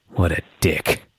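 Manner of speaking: hushed whisper, barely voiced. Retelling a wrestling segment where Rey unhooks his mask: retelling a whisper. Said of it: "he just whispers".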